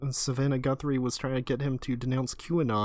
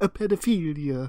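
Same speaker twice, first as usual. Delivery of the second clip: loud, bad put-on Italian man accent; 4 semitones higher, 5 dB louder than usual. Quoting how a man says a word, in an italian man accent. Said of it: "he says it like an Italian man".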